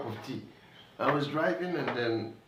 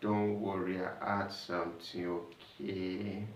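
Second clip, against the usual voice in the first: put-on slow-motion slurring, lower pitch; 4 semitones lower, 6 dB quieter than usual. Retelling what a woman she drove kept saying: imitating slow-motion slurred speech. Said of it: "like she was talking in slow motion".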